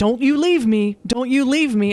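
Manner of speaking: loud, high yelling. Retelling a grandmother at a deathbed: imitating someone yelling. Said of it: "she's yelling at him".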